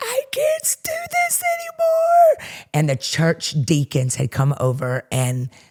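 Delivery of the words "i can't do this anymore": very high, drawn-out, overwrought scream. Retelling your mother in the kitchen while your dad calmed her, imitating her screaming. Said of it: "she's screaming".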